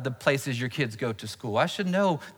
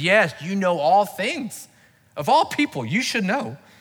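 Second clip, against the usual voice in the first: fed-up, frustrated, raised and pitched-up voice; 6 semitones higher, 5 dB louder than usual. Retelling Jesus asking a third time, imitating frustrated Peter. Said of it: "Peter, frustrated, says".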